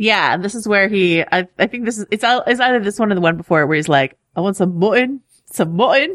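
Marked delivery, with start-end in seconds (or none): 4.4-6.2 put-on Northern accent with Irish tinge. Imitating a character's line while recapping an episode: Davos accent. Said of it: "That's how he says mutton".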